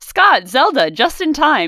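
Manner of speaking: mock cheery, high, loud, glad voice.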